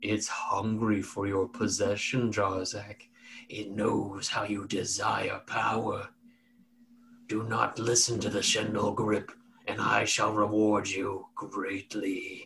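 very slow, low rumbling voice with giggling. Voicing a presence in a player's head: low rumbling giggling voice. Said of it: "this low rumbling giggle in the front of your forehead again that says".

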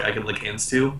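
ordinary talk

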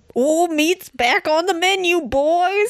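high-pitched, screeching, otherworldly voice. Reading a story aloud and voicing Papa's line: Papa's screeching otherworldly voice. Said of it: "screeched Papa in his otherworldly voice".

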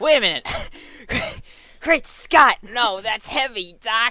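very loud, high, excitable blurted exclamations. Brought on as the expert on a car, the speaker does a Marty McFly impression. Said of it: "Marty McFly".

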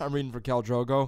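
put-on regular American accent. Imitating an actor walking into an audition: Jason Momoa impression. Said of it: "he walked in, he was like".

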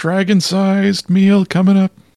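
very high, drawn-out shouting. The man at the counter takes an order and calls it out: yelling to the back. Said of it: "And he yells to the back".

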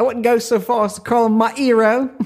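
very high, hero said as 'ero. Talking about an actor with co-hosts, dropping the h on 'hero'. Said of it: "what accent was that?".

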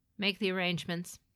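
plain

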